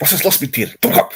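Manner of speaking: fake German accent. Showing how to sound german, in a put-on german accent. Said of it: "this is how you sound German".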